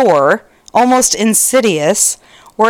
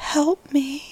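put-on creepy whisper, much quieter; 5 semitones higher, 10 dB quieter than usual. Retelling what she said one night after sitting up, to her boyfriend: creepy whisper. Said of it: "creepily whispered".

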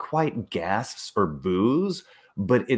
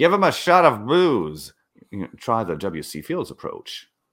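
smarmy, smug, joking talk-show host voice; 4 dB louder than usual. Retelling a talk show host's jokes about a crying child: smarmy Dick Cavett joking voice. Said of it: "smarmy jokes".

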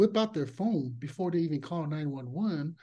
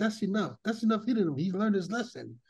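ordinary delivery

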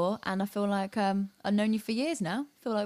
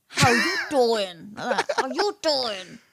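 loud, belted out, raised voice; 2 semitones higher, 5 dB louder than usual. Asked to give a 'how you doing' before the other leaves; Joey Tribbiani voice. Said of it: "say it in a Joey Tribbiani voice".

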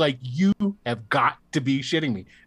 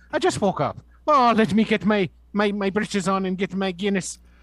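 fake Irish accent, higher pitch; 6 semitones higher than usual. Joking about Saint Patrick's Day: put-on Irish accent. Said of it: "Do that Irish accent".

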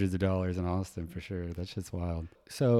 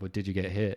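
acted-out mocking, teasing, taunting tone. Retelling how others teased about flinching in traffic: imitating people making fun. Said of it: "they're constantly making fun of me".

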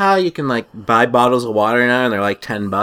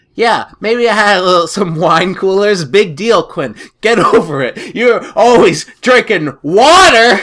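loud, shrill, mock belligerent angry-drunk ranting; 8 semitones higher, 5 dB louder than usual. Voicing Karen while recapping a story, as an angry drunk. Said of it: "I envision Karen as like an angry drunk".

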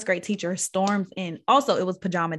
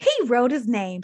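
put-on fuming, livid voice, pitched up; 5 semitones higher, 3 dB louder than usual. Telling a story, quoting the teacher speaking to the principal, imitating a livid teacher. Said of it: "So she's like livid".

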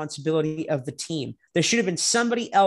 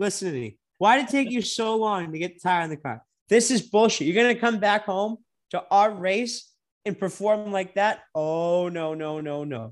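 ordinary talk

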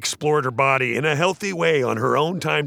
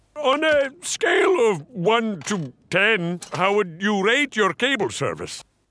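high-pitched put-on Scottish accent; 7 semitones higher than usual. Retelling a prank call made as a cable company caller: put-on Scottish voice. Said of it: "He's doing this voice that sounds kind of".

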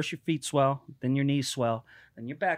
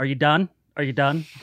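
put-on begging, pleading voice, louder; 6 dB louder than usual. Retelling getting beaten in middle school: imitating own plea while beaten. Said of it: "getting my ass kicked where I'm on the ground going".

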